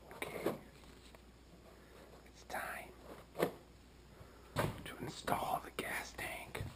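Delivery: very soft, hushed whispered narration. About to install a gas tank, the speaker is whispering for no reason. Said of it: "I'm whispering for no apparent reason".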